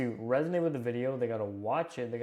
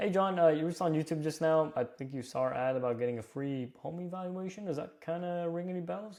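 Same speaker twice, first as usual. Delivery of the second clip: curious, inquisitive, inviting tone, pitched up; 4 semitones higher than usual. Demonstrating an opening question to someone who saw an ad, curious, inviting, questioning tone. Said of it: "the tone is very curious, very inviting, very questioning".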